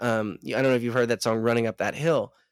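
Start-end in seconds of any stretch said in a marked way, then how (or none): none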